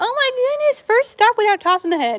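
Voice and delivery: high, loud, delighted exclamation.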